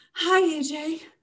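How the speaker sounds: a little out of breath, very high-pitched. Rin greets AJ, on whom she has a crush, a little breathless. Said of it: "Rin said a little breathlessly".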